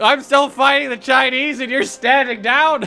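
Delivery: shouting. Complaining that a teammate is standing down in a game: yelling. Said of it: "stop yelling at me".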